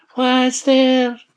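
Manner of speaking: very loud, high, put-on old lady voice. The wolf calls out after a knock at the door, put-on old lady voice. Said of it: "The wolf put on his best old lady's voice and called out".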